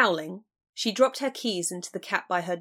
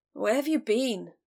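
put-on slurred speech; 3 semitones higher than usual. A man just jerked awake in bed speaks to a woman, slurred. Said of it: "he slurred".

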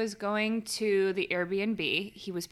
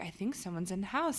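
whisper, much quieter; 7 dB quieter than usual. Recalling the moment Sean finally picked up her call: retelling a whisper. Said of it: "I'm whispering because I'm like".

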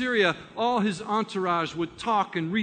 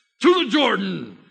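raised, authoritative, commanding voice; 7 dB louder than usual. Acting out a man back in his chariot calling out, acting out a commanding order. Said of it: "tries to regain some of that commanding presence".

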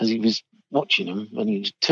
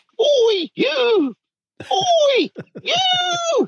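put-on long, high, shrill sergeant major shout. Recalling crossing the drill square while leaving the army; imitating RSM Ainsworth shouting. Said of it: "the RSM Ainsworth was shouting".

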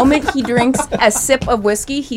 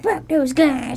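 angry, disgusted, fed-up outburst; 4 semitones higher than usual. Retelling what he said when he got in the car, imitating him mad. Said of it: "He was all mad".

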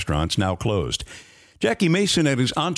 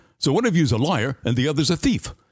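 put-on thick, laid-on New York accent; 4 semitones higher than usual. Recounting what Mason shot back at dinner: Mason's thick New York accent. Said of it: "in that thick New York accent".

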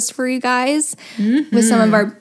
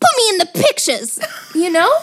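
fake, sing-song, pitched-up old-Hollywood talkie accent; 8 semitones higher than usual. Asked to say it again, repeating a bit in an old-time movie accent. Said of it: "say it again".

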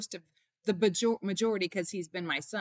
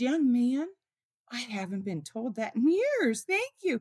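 voice catching, choked up with emotion; 4 semitones higher than usual. Retelling an older woman's reply to being called beautiful: imitating someone choked up. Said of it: "she gets choked up and says".

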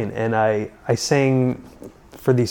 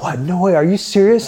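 mock thrilled, high-pitched, excited disbelief; 7 semitones higher, 4 dB louder than usual. Speaker acts out a man's reaction to her dad's question, retelling an excited reaction. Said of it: "AJ just like totally got excited".

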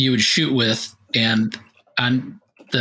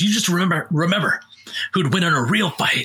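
mock angry, high-pitched delivery; 5 semitones higher than usual. Retelling what a rival said after losing a game: imitating an angry rival. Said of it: "And the guy got so mad".

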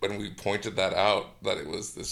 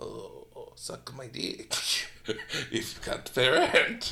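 put-on movie vampire accent; 4 semitones higher than usual. Acting out what an older landlord would say, in a vampire accent. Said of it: "What accent is that?".

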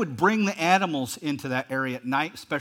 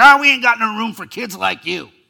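put-on loud, crusty, grizzled old man voice; 6 semitones higher, 11 dB louder than usual. Retelling the cartoon version of the front desk clerk: grizzled old cuss voice. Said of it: "this grizzled old cuss".

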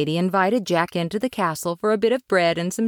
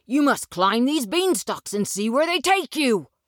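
thrilled, excited cry, high and rushed; 7 semitones higher than usual. Narrating a story, the mother bursts into Jack's room, an excited mother crying out. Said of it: "[name] and his mother lived all alone in a little hut with a garden in front of it. / said the mother".

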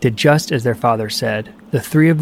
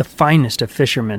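plain

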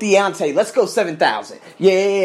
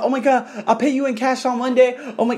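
mock-scared, panicked girl voice, much higher; 5 semitones higher than usual. Retelling what a frightened girl said to him, imitating a scared girl. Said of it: "she got so scared".

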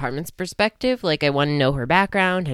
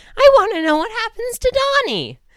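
voice cracking, breaking into a very high squeak; 6 dB louder than usual. Asking what happens to Donnie in the next book, voice cracking. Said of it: "Voice crack".

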